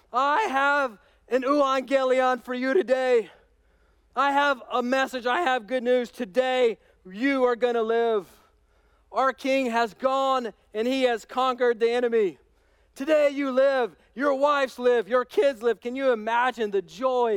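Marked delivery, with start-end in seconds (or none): 0.1-15.8 mock herald voice, yelling like a proclamation. Acting out a breathless herald announcing victory at the city gate: yelling herald. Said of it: "he yells".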